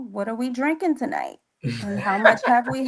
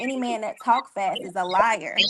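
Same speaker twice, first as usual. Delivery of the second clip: normal talking voice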